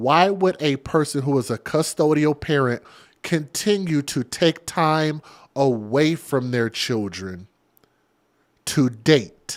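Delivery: said really slowly, at an unhurried pace. Asking listeners a question, saying it real slow. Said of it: "let me say this real slow".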